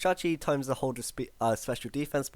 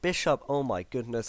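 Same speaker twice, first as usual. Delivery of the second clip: ordinary delivery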